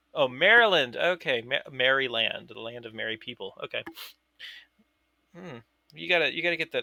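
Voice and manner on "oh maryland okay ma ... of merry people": normal talking voice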